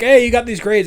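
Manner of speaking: very loud, high-pitched, shrill yelling. Retelling how a movie scene's line is delivered: imitating someone shouting. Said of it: "you're shouting like".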